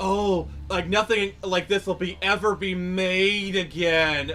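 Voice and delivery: high, pompous tone. Mocking a writer who comes across as pompous: pompous Tony Gilroy impression. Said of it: "the most pompous prick ever".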